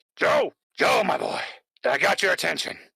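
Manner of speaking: loud, rough voice called out at full volume. Voicing a faint voice heard in the head: voicing Armstrong. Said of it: "Is that Armstrong?".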